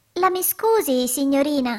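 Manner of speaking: little hollow voice, calling out. Narrator reads a little worm poking its head out of a hole, exclaiming. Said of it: "Esclamò".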